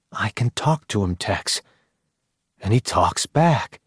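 ordinary talk

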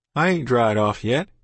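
ordinary delivery, nothing marked

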